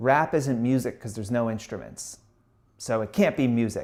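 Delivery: ordinary delivery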